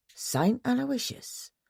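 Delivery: strangled, choked, muttered words. Bradford, walking down the hall with Phyllida and Rita, reacts in a strangled mutter. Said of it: "mutter in a strangled voice".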